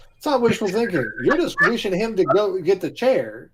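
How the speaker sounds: "chair" drawn out in a southern drawl. Speaking in character, arguing about a trial outcome: southern drawl. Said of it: "I heard a southern drawl on chair".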